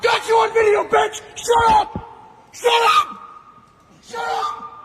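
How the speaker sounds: loud screaming until the voice breaks and cracks. Screaming at someone during a filmed argument: screaming, voice cracking. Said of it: "screaming at somebody and your voice just cracks".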